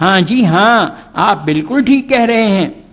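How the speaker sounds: sneering, mocking sarcasm. Explaining sarcasm with an example phrase, said in mocking sarcastic tone. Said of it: "जैसे हम किसी की बात का मजाक उड़ाते हुए कहते हैं".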